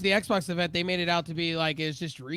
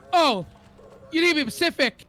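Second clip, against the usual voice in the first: mock, very high, shrill, angry outburst; 10 semitones higher, 7 dB louder than usual. Imitating another speaker's words back to him: imitating someone angry. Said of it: "the anger behind it".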